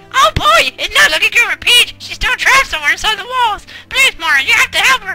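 squeaked out very high. Reading game dialogue aloud, the speaker pleads with Mario in a Toad voice. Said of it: "let me get my best toad voice on".

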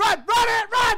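high, loud, panicked screaming mixed with laughing.

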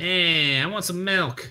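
very slow, drawn-out put-on craving voice. Joking around while playing, doing a put-on craving voice. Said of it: "That's a person who wants milk".

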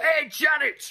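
mock loud shout.

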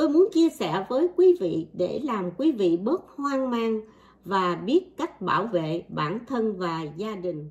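ordinary delivery

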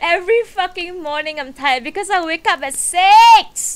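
high-pitched, laughing, exasperated rant.

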